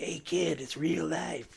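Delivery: soft, rough, creaky, raspy heavy-smoker voice. A podcast host tells listeners it's real life, raspy smoker's voice. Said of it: "You sound like you've smoked a few too many".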